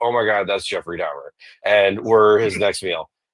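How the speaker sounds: ordinary delivery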